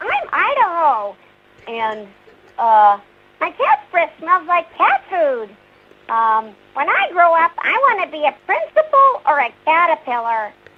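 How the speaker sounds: high, sing-song cartoon voice with swooping pitch. Answering a request for a favourite line in the character's voice: Ralph Wiggum voice. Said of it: "just like to rattle them off".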